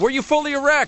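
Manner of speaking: very high-pitched heckling voice. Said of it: "the guy from the Stern Show was going".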